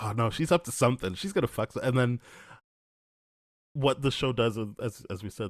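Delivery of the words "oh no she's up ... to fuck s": ordinary talk, nothing marked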